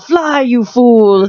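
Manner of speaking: acted-out, high-pitched yell. Recounting cosplayers in an elevator, the speaker retells one of them yelling. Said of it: "one of them would yell".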